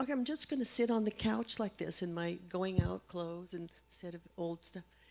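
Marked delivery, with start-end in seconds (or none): none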